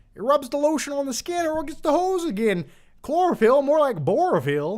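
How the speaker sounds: badly done, very high, squeaky voice. Reading a viewer's request, then doing the line as asked: Adam Sandler Waterboy voice. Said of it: "In the style of Adam Sandler's The Water Boy".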